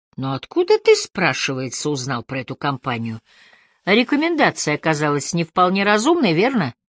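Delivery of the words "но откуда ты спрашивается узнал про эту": usual speaking voice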